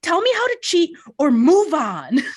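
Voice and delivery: very high, loud, frantic screaming. Retelling a line screamed while freaking out over a puzzle: imitating Kellyanne screaming. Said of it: "she literally screams".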